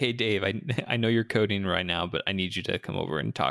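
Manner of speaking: ordinary talk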